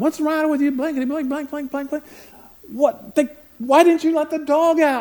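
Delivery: very high, loud, out-of-control yelling. Speaker retells yelling at him over the mess on the carpet, retelling yelling at someone. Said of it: "and just yelling at him".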